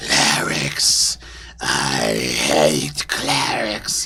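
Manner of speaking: very deep, very slow monster hiss. Narrator voices a creature hissing at the air: hissing creature voice. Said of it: "it just hisses at the air and says".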